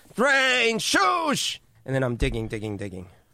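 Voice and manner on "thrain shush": very high, loud, hollering yell. Calling out for lost friends while digging through snow: yelling loudly. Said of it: "I'm yelling loudly".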